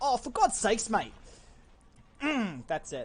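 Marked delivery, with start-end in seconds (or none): 0.0-1.1 loud, high put-on Australian accent. Speaker imagines how an Australian would say the phrase, in an Australian accent. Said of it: "an Australian being like".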